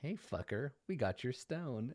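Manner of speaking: jeering, taunting jibe. Voicing a tiefling driver grinning at a player while passing: grinning taunt. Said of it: "flash you this sharp-toothed smile".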